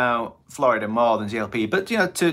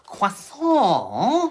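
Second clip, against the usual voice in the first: croissant squeaked very high, cartoon-style. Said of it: "as the guy in Mickey Shorts says".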